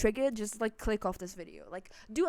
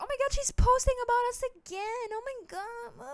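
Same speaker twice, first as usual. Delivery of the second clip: very high, squealing, whiny put-on voice. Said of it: "be like".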